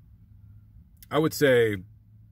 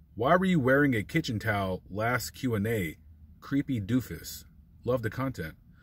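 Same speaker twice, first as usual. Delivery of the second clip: usual speaking voice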